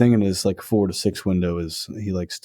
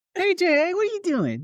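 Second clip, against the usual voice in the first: put-on very high-pitched baby voice. Asked to give some baby talk, speaking to Jay in baby talk. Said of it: "Can you give us some baby talk?".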